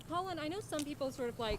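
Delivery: very quiet mumble through a mouthful of food. Asking the other speaker for a recommendation mid-bite, talking with a full mouth. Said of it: "sorry, mouth's full".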